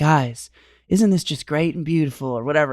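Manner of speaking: sweet, gentle voice with a faint southern lilt. Imitating how a man always talked to the guys, soft voice, slight southern lilt. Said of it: "talk in a really soft voice with just a slight southern lilt".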